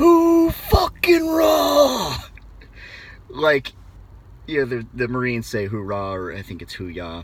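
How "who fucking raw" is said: very loud, very high, raw, stretched mock British yell. Quoting what a man yelled, yelled in imitated British accent. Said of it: "in this British accent, ... he yells, ... I'm going to butcher this. I can't do it as cool as he did".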